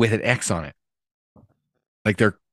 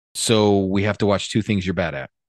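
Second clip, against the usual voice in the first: ordinary delivery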